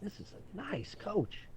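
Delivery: high, slow, drawn-out, awed and wondering voice.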